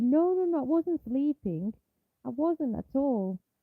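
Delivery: frightened man, scared, protesting tone. Retelling how a night shift worker caught sleeping answered his boss: imitating a scared man. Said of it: "he got really scared and said".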